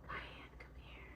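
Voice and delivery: put-on whisper. Retelling what God says to the speaker: imitating God whispering. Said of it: "He always whispers to me".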